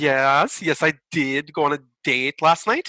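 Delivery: clumsy fake Norwegian accent, drawn-out "yes". Retelling a Norwegian man's answer about his date, in a really bad Norwegian accent. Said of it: "a really bad Norwegian accent".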